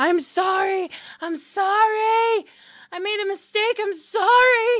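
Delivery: shrill, very high, very loud screaming. A narrator voices a Bruja being dragged out by his neck, screaming. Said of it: "And he's screaming".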